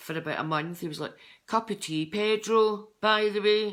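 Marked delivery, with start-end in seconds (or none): 1.5-3.7 put-on high, loud Fife accent. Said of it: "he used to have a dead Fife accent".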